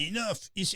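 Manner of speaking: mock French accent. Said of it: "it did sound French".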